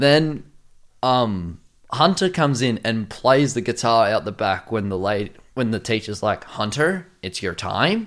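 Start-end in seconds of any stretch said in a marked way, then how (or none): 6.4-8.1 bad put-on American accent. Quoting the teacher calling on hunter, in a bad american accent. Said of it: "Bad American accent".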